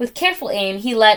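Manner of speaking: plain reading voice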